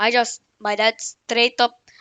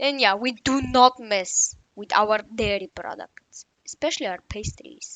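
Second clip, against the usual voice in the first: bad fake Bulgarian accent, quieter; 4 dB quieter than usual. Joining in after the other speaker, in a bad Bulgarian accent. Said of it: "bad Bulgarian accent".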